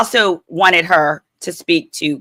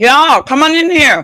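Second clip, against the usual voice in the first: slow, high speech through a full mouth; 7 semitones higher, 4 dB louder than usual. Calling everyone in to get started, talking with a mouthful of cereal. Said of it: "I got a mouth mouthful of cereal".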